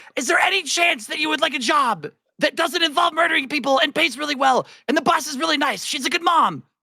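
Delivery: very high-pitched, shrill yell. Speaking in character to him during the fight: yelling at him. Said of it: "I'm yelling at him".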